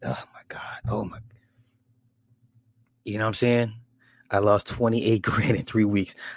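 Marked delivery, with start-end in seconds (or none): 0.0-1.2 exasperated, hushed, breathless whisper. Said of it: "I just be like".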